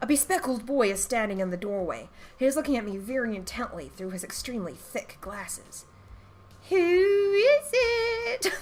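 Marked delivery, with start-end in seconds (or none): 6.7-8.5 put-on very high young boy's voice. Voicing a bespectacled boy standing in the doorway, boyish voice. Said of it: "We'll just do like a, a boyish one".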